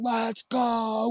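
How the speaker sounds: high, screamed cheer.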